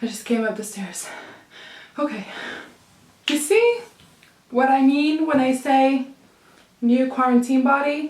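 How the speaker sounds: winded, breathless, puffing, out-of-breath chatter. A vlogger who just came up the stairs talks to the camera, out of breath. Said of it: "I'm just out of breath".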